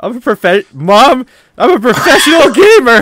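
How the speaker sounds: deliberate voice cracks, very high and very loud. Imagining telling mom something, voice cracking on purpose. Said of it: "with the voice cracks and everything. / I did that on purpose".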